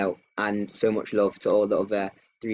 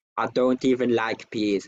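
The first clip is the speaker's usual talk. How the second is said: slow, put-on Polish accent in a man's voice; 2 semitones higher than usual. Telling Jack's story, the speaker quotes him at the supermarket in Jack's Polish accent. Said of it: "he says in his Polish accent".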